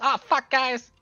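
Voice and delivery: very high, very loud, tiny shrunken voice. Voicing a character shrunk by one-eighth who now talks differently: voice of a shrunken character. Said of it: "And now he talks like this".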